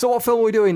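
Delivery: high, loud, fast, breezy. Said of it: "just going".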